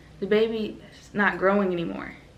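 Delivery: plain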